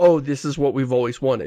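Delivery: ordinary talk, nothing marked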